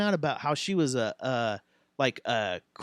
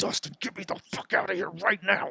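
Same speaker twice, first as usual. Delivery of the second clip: creepy demon voice, higher; 3 semitones higher, 4 dB quieter than usual. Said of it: "I'd go to Demon Voice".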